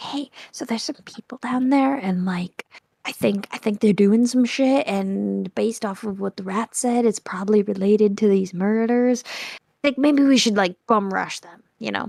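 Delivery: whispered voice. Speaking in character to the other players: whispering. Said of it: "I'll just whisper to you guys like".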